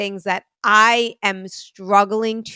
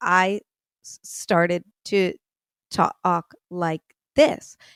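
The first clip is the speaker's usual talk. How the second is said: very slow, drawn-out speech, slowed to a crawl; 3 semitones lower, 3 dB quieter than usual. Showing how you talked at a nonprofit meeting, very slow talking. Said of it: "instead of talking like this".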